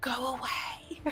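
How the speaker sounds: eerily quiet hush, almost a whisper. Narrating a large creature dismissing a goblin before throwing him: eerily quiet voice. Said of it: "in almost like a eerily quiet voice for a creature of her size".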